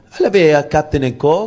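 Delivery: sudden, fake, put-on French accent. Ordering a drink from a bartender who said bonjour: put-on french accent. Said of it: "you just start with the fucking accent for no apparent reason".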